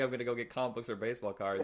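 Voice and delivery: ordinary talk, nothing marked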